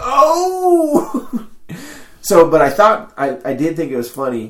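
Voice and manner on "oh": very high, loud, startled laughing yelp. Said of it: "I was like".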